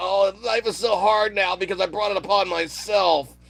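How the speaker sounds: put-on whiny complaining. Retelling someone's complaints: mock whining. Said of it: "pissing and moaning about".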